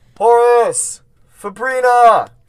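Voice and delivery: very high, very loud screaming. A character wakes to a fire and darts outside, screaming names. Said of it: "He starts screaming for the people".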